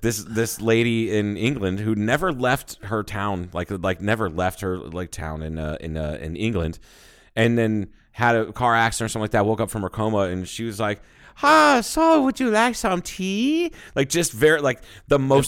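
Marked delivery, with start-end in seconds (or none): 11.4-13.7 high-pitched, slow, bad Chinese accent. Retelling what a woman with foreign accent syndrome sounded like: imitating a bad chinese accent impression. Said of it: "horrible fucking Chinese impression".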